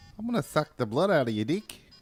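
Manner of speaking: loud, high Australian vampire voice.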